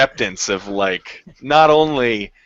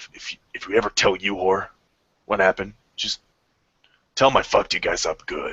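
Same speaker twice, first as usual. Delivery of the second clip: hushed half-whisper; 3 semitones lower, 4 dB quieter than usual. Voicing a character addressing the party on the way back: half-whispering. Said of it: "he kind of whispers to you guys".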